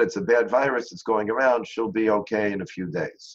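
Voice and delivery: ordinary talk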